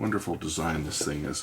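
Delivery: plain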